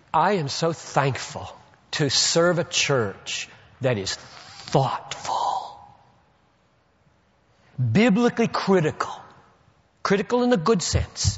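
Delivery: slow delivery full of emotion. Responding to questions about the church, the speaker lets emotion show: emotional. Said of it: "I'm going to get emotional about them".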